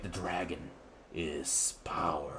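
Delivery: very hushed, very quiet, super ominous voice. Recalling the main villain in a childhood show's opening, super ominous voice. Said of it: "just this super ominous voice".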